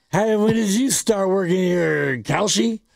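put-on old person voice, sounding drunk. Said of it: "your old person sounds drunk".

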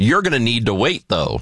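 mock joking, laughing tone. Retelling what a woman said while laughing, imitating her joking, laughing tone. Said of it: "jokingly and laughed as she said it".

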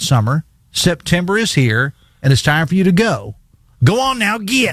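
southern West Virginia twang, "get" said as "git". Reading a friend's social media post aloud, in a Logan County accent. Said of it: "I'm going to do this in my best Logan County accent".

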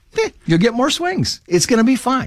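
high, offhand voice, shrugging it off.

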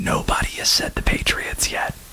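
soft, voiceless whisper. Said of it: "Don't know why I'm whispering".

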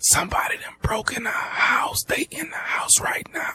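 frightened, breathy, barely voiced whisper. On a phone call where the other person can barely hear: whispering. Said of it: "why the hell are you whispering".

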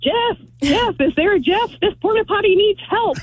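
high-pitched mock yelling, like a crowd.

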